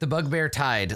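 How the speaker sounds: ordinary talk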